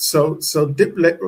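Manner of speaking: plain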